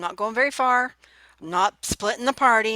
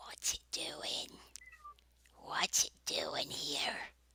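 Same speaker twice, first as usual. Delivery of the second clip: tiny little voice, barely a whisper; 15 dB quieter than usual. A game master voices a speaker wondering about the party's arrival: little voice. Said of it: "you hear a little voice say".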